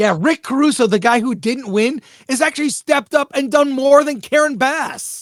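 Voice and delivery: loud, high, furious angry yelling. A really pissed-off speaker talking with another person: angry yelling. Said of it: "I'm sorry if I'm yelling".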